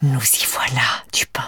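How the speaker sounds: snake-like hiss, whispered. Narrator reads the inspector's line, hissing in a snake-like voice. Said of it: "siffle d'une voix de serpent".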